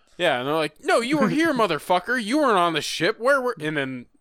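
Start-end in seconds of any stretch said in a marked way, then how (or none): 0.8-3.6 put-on angry scolding, higher. Retelling a movie scene where people are mad at him: imitating angry neighbors. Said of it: "mad at him".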